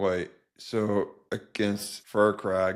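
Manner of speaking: unhappy, dismayed, slow and flat.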